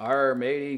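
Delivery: put-on pirate voice with pirate jargon. Imagining an actor at an audition speaking his pirate jargon, pirate voice. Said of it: "starts speaking in his pirate jargon".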